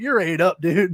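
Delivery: ordinary talk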